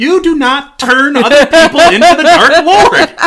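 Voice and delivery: shrill, very high, very loud, slow shriek. Imagining a scolding from Professor McGonagall: shrill McGonagall voice. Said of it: "I can just imagine her shrill voice coming in".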